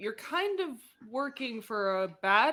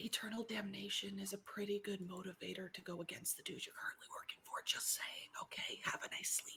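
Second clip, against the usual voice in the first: very quiet, breathy put-on whisper; 5 semitones lower, 19 dB quieter than usual. Speaking in character to a tired ally: whispering in character. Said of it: "I whisper to him".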